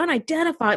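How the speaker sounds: exasperated, frustrated, upset voice. Retelling a captain's reply about an unidentified vessel: retelling a frustrated reply. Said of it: "frustrated and".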